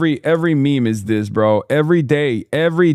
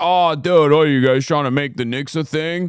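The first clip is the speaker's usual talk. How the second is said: mocking, exaggerated complaining tone. Knicks fan ranting about a boston fan, mocking a complaining boston fan. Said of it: "constantly chirping and and constantly fucking complaining like".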